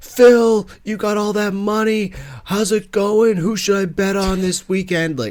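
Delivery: put-on screaming. Mocking golf fans who yell at a player: imitating a fan screaming. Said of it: "screaming at him".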